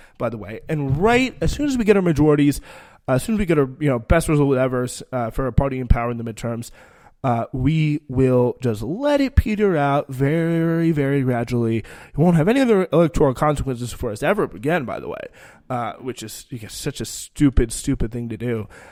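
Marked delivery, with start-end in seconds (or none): none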